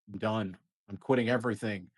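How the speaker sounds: ordinary delivery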